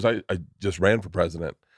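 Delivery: deadpan, completely earnest, low, dead-serious delivery. Retelling someone's answer about having run for president: imitating a dead-serious reply. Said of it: "he looked at me dead serious".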